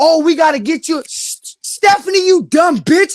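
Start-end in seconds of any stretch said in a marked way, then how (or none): 1.1-3.2 stretched out and pitched high. Speaking on a party line, he scolds a woman on the wrong channel: yelling at someone. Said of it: "worried about why I'm yelling".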